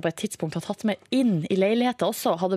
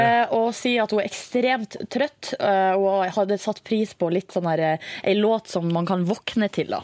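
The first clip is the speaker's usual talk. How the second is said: ordinary talk, nothing marked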